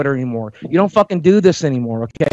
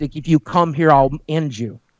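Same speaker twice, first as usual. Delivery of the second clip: mock ironic, tongue-in-cheek, sarcastic. Retelling own earlier words to an opponent: mock sarcastic threat. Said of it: "Being sarcastic".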